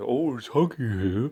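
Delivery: slow, drawn-out, silly toy character voice. Seeing a child's Huggy Wuggy toy at home, doing a Huggy Wuggy voice. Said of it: "I put on this voice".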